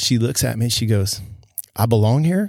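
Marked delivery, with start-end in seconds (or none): 1.7-2.5 half-confident, unsure tone with rising intonation. Retelling what she said in the room: imitating a confident but questioning tone. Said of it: "sort of confident, but sort of, like, in a question".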